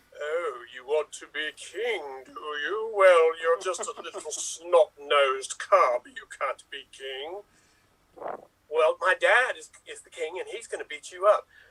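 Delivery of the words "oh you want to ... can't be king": deep, dropped-low villain voice. Acting out The Lion King in one minute: Uncle Scar voice. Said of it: "here comes my Uncle Scar".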